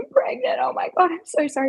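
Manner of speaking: crying through every word, tearful bawling. Retelling a phone call and reenacting the tearful confession to a partner, imitating tearful crying. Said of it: "bawling my eyes out".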